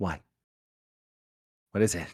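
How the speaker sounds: whispered voice. A player speaks as their character, peering toward a crib from afar, whispering. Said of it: "I'm gonna whisper".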